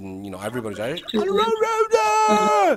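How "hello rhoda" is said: very high, loud, sharp chorus, one word stretched. Retelling how the students greet the teacher: imitating a loud, sharp class greeting. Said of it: "you hear a very loud and sharp voice".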